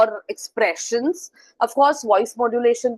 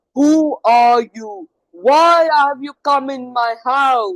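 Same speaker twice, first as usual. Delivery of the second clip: loud, slow, drawn-out storybook giant voice; 2 semitones higher, 5 dB louder than usual. Showing how the giant talks in a story, in a put-on giant voice. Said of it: "the way the giant talks".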